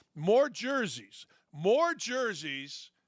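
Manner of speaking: slow, drawn-out, emphatic delivery. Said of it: "I'm gonna say this slow".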